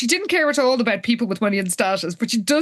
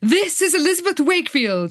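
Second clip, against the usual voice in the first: put-on grand public announcer voice, pitched higher; 5 semitones higher than usual. Retelling how Liz speaks over the intercom: Liz addressing the nation. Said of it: "Liz is, like, addressing the nation".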